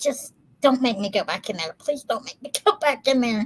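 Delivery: put-on begging through sobs, tearful and crying. Retelling begging a friend to let them leave a party, imitating own tearful plea. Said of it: "both bawling".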